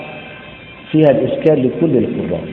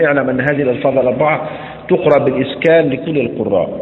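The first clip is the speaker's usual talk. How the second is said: ordinary delivery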